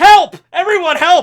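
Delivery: very loud, high-pitched, desperate yell at full volume. Retelling a manga scene where the hero yells for help: imitating Mirio yelling for help. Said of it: "He yells".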